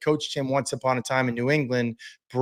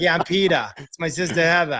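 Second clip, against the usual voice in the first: thick, heavy, really strong Boston accent; 3 dB louder than usual. Explaining how she didn't want to sound growing up, in a really hardcore Boston accent. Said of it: "practice talking the way they talked".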